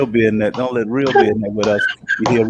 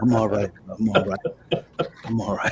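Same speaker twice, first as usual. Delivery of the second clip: put-on "under something" phone voice, quieter; 2 semitones lower, 7 dB quieter than usual. Acting out a phone call where the friend seems under something: imitating a friend sounding like he's under something. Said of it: "You're talking like you got some thighs on your ears".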